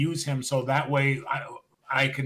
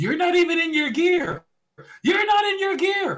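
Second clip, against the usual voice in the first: very high, loud acted yelling at top of lungs; 5 dB louder than usual. Retelling a wrestling manager stopping a wrestler, imitating Heyman yelling. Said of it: "hear Heyman yelling at the top of his things".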